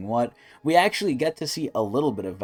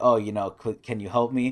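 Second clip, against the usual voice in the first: put-on pleading, begging tone. Retelling an anime scene where a character begs for help: imitating begging. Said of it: "Here she's basically begging Ro".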